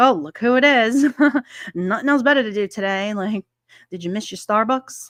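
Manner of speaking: mock snide, snarky, sarcastic tone. Retelling what gets said to a news reporter: imitating own snarky tone. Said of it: "kinda snarky in a way where I'm just like".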